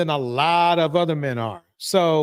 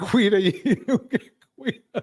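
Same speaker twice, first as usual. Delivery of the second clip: laughing, pitch rising high. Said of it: "I'm sorry for laughing".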